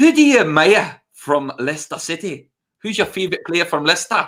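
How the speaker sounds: bad put-on Scottish accent. Turning into Gio to ask your mate another question, do a bad Scottish accent imitating Gio. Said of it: "That's a terrible Scottish accent".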